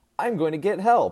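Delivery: very loud, very high, utterly sure delivery. Retelling own words as a six-year-old in a blizzard: imitating own completely confident statement. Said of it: "stating completely confident".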